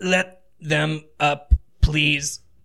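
squeezed, strained voice, words squeezed out. Narrating as two men hold companions pinned to the ground, Ortic's squeezed voice. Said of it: "Ortic in like a squeezed voice".

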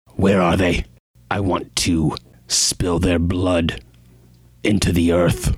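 voice full of murderous rage. Voicing an armed character demanding to know where the killers are: murderous rage. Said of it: "stands there murderously with this cleaver".

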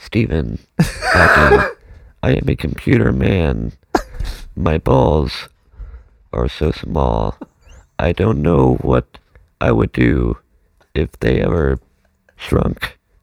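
robotic put-on voice, very deep and low. Asked to do the robot voice, answering in a robot voice. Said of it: "can you please do the robot voice?".

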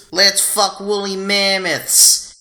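high-pitched, drawn-out, dumb-sounding voice. Quoting a line to the others: stupid Justin Roiland voice. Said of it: "stupid Justin Roiland voice".

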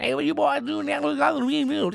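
very high, creaky, rough, hard-to-follow voice. Retelling what a guy straight out of King of the Hill said: Boomhauer voice. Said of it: "Boomhauer from the fucking King of the Hill".

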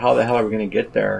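ordinary talk, nothing marked

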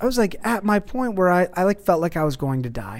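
ordinary talk

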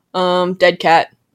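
ordinary talk

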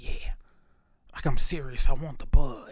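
put-on whispering voice. Recalling confirming a delivery order by phone in the movies, imitating himself whispering. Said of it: "So I'm in the movies whispering".

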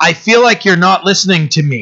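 acted rising anger, getting heated. Retelling a man getting angry during a conversation, retelling an angry man. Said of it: "he starts getting angry".

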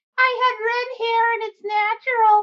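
very high, loud, squeaky frog puppet voice. A podcast guest speaks as her frog puppet, in Camilla the frog voice. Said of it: "that's Camilla the frog".

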